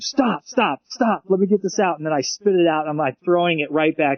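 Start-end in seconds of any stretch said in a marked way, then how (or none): 0.0-2.0 rapid, high, urgent, repeated yelling. Retelling trading ideas with him and telling him to stop: retelling a yell. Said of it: "I'm yelling at him".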